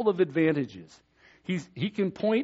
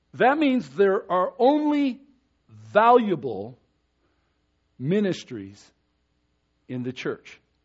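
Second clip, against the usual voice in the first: slow, deliberate, halting emphasis; 4 dB louder than usual. Preaching to a church, slowing down so listeners digest the words, slow and deliberate. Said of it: "I'm saying this slowly on purpose".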